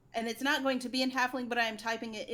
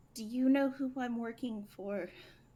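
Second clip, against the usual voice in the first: whispering, slower. In a role-played scene, leaning in to question another character: leaning forward and whispering. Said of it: "I'm gonna lean forward and whisper".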